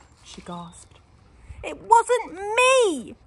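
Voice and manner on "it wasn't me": very high, piercing scream, "me" drawn out. Lara's parents find the orchid ruined and Lara denies it, screaming. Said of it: "screamed Lara".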